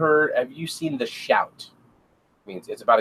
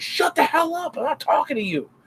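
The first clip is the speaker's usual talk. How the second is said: high-pitched angry yell. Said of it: "I'll start yelling at her".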